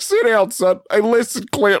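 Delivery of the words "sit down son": ordinary talk, nothing marked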